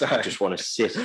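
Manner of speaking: normal talking voice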